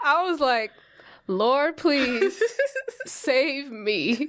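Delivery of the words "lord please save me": very slow, desperate, terrified pleading. Retelling a ride that started going up, praying aloud: reenacting a terrified plea. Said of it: "I felt like I was about to die".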